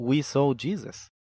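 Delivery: normal talking voice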